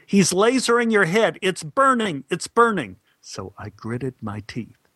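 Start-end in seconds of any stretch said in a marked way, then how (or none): 0.1-2.9 very high-pitched shouted delivery. An actor recalls the director's instructions during a shoot, retelling the director's yelled instructions. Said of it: "the director kept yelling instructions at me".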